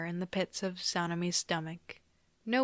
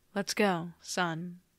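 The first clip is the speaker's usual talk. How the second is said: utterly flat, expressionless, very monotone deadpan delivery. Reading a story, Gyu takes a boy's hand: very monotone voice. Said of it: "in the most monotone voice ever".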